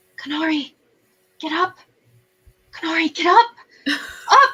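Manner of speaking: gentle, high voice, rising. Narrating a voice in the back of Kanari's mind: gentle, high-pitched voice. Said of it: "a gentle, high pitched voice".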